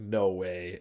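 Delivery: ordinary talk, nothing marked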